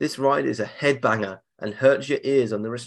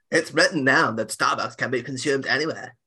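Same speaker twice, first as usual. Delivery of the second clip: put-on voice of a woman. Telling a story about a woman in a queue, imitating Edelaine's voice. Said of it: "you've nailed Edelaine's voice there".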